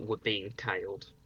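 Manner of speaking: hushed, half-whispered word. Playing a character who warns a companion about being followed: half-whispering in character. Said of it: "I just whisper over".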